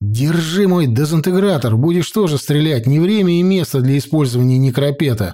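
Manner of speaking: ordinary delivery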